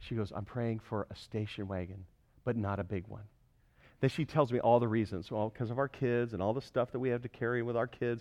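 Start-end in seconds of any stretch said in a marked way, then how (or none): 0.3-3.2 put-on serious tone, much lower, quieter. Retelling how she answered the speaker's sarcastic question, acting serious and sober. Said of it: "she got real serious, real sober".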